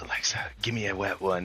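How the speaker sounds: hushed, very quiet half-whisper under the breath. Retelling a guy asking alexa for a fart: imitating someone half-whispering. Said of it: "he starts whispering".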